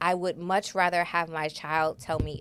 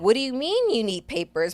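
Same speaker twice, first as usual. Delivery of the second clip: higher-pitched, shocked, alarmed tone; 6 semitones higher than usual. Retelling her reaction when her gut dropped: retelling her own alarmed reply. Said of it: "I was like".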